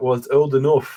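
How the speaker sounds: put-on British accent. Retelling what a visiting scholar said in the library, British accent. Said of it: "in his British accent".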